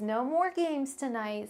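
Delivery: mom voice, firm. Turning down a request, repeating the refusal in a mom voice. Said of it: "I sound like a mom".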